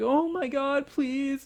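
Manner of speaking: high, loud, hammy, overacted pleading. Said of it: "Agatha's hamming it up like".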